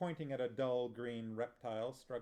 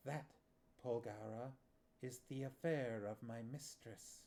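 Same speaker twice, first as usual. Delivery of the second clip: sibilant hushed hissing whisper; 5 dB quieter than usual. Narrator reads a snake's reply to Polgara: sibilant whisper. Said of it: "in a voice that was a sibilant whisper".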